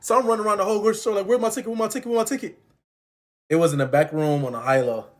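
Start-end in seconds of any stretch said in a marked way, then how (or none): 1.3-2.6 play-acted frantic panic, high and rattled off. Speaker retelling losing a lottery ticket in a grocery store, acting out panic. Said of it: "I started panicking".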